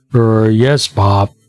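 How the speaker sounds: disguised deep baritone. Playing an investigator answering an old man in disguise: disguised painfully deep baritone. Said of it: "deep baritone".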